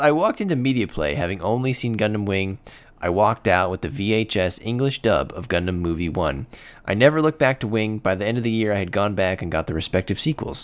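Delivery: ordinary talk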